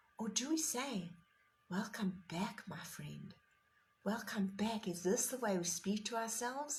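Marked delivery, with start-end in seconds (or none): 1.7-4.9 kind, tender, loving delivery. Showing how we should talk to ourselves while meditating, in a loving voice. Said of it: "In a loving voice".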